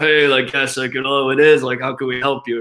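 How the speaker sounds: forced, strained, serious professional business voice. Retelling answering a business call as a teen: imitating his own forced deep voice. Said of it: "Trying to make my voice as deep as I possibly could".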